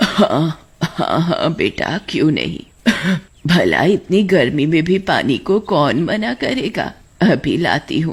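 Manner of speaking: put-on old granny character voice. Narrator voicing the granny answering a traveler who asks for water, old granny character voice. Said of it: "तब वो अम्मा अपने असली रूप में आती है, यानी चुड़ैल के रूप में। / तब वो अम्मा अपने असली रूप में आती है, यानी चुड़ैल के रूप में। एक और मुर्गी मेरे जाल में फंस गई। मेरी जादुई मक्के की रोटी खाई है तूने। बस".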